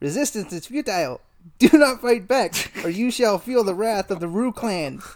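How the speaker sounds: odd, weird talking-kangaroo animal voice. A newscaster relays the message of Jack, leader of the Kangaroos; Jack's voice. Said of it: "why you sound like that".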